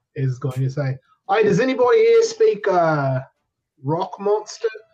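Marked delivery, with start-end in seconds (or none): 1.2-4.6 shouting. Voicing a character calling out to a creature: yelling. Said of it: "having no qualms about yelling".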